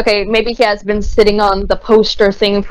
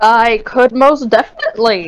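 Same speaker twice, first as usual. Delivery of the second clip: cracking, breaking voice; 2 semitones higher than usual. Agreeing when asked to roll a perception check, voice cracking. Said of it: "what was that voice crack?".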